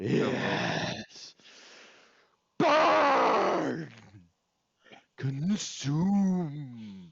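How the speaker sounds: voice booming out. Describing a voice in the mind, the speaker performs it: booming voice. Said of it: "as this voice booms out".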